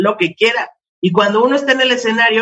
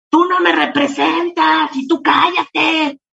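put-on high, rough, rasping, drawn-out heckler yell; 8 semitones higher than usual. Retelling how a woman in the bar yelled from the back: imitating a heckler yelling. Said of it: "me empieza a gritar".

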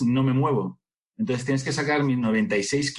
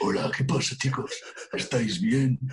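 very thick, heavy, deep voice. Describing a performer's voice, then imitating Lito's very thick voice. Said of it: "así, tío".

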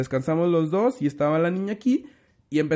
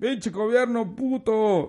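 pitched-up yelled shout; 5 semitones higher than usual. A father retells telling his little girl what to yell, retelling a shout. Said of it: "grítales".

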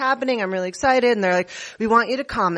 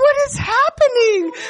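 put-on very high, loud, guileless, innocent, baffled cry; 7 dB louder than usual. Retelling how the speared friend reacted: imitating an innocent confused tone. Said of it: "this innocent".

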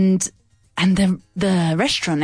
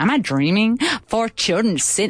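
put-on Canadian accent; 4 semitones higher than usual. Retelling what a man said near the children, now in Canadian accent. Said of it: "it was a Canadian accent".

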